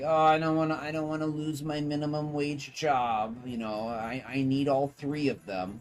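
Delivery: mock scared, worried voice. Retelling what fast food workers say about their jobs: imitating a scared worker. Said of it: "most people are scared".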